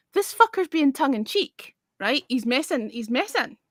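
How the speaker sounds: ordinary talk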